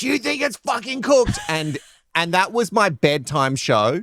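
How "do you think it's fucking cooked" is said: very high, shrill, screaming rant. Describing a cooking show host who yells at cooks, doing a Gordon Ramsay screaming impression. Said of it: "and screams at them".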